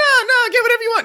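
very high, loud mocking voices.

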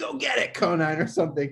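very high heckling yell. Retelling a fan yelling at the player over a pop fly, retelling a fan's yell. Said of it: "some fan like just yells at him like".

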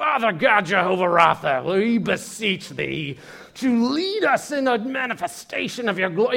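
slow, high prayer voice, slight mid-Atlantic tinge. Mimicking someone asked to lead the group in prayer, in a mock prayer voice. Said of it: "prayer voice".

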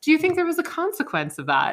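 put-on very high, swooping, judgmental sarcastic tone. Retelling how Margaret asked a question: imitating Margaret, sarcastic and judgmental. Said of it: "Margaret judgmentally and sarcastically asks us".

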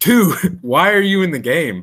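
high, drawn-out hollered yell. Retelling yelling at a kid in the game: retelling own yell. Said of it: "I just yelled at him".

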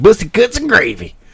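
silly high reading voice. Retelling a TikTok video of someone reading messed up signs: imitating Thomas Thornhill's funny voice. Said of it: "he does it like a funny voice".

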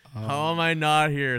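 mock pissed-off tone. Retelling a dad's reaction to missing a golf round: imitating someone pissed off. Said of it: "so pissed".

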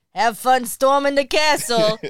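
put-on loud, heavy New York accent, laid on thick. Quoting a movie line while discussing the film, in a Billy Crystal heavy New York accent. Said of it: "a guy who has like a heavy New York accent".

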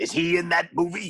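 put-on gruff movie-star voice. Joking about a movie with friends: Al Pacino impression. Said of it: "Is that your Pacino impression?".

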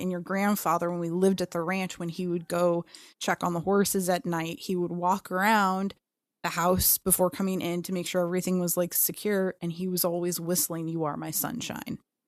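normal talking voice

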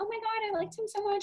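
mock moping, very high-pitched, droopy and sad. Retelling how she reacted after he left, imitating someone depressed. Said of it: "She was all depressed".

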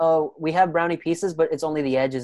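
plain

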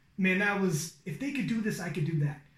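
ordinary talk

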